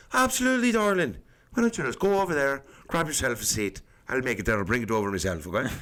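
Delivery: friendly, lilting, swooping Irish brogue. Retelling what the Irish bartender said to a girl: imitating Peter's Irish accent. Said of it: "Very Irish".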